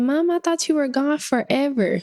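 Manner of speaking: mock little boy voice, high, on the verge of tears. Retelling what the son said, looking like he's about to cry: imitating a child about to cry. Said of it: "looking like he's about to cry".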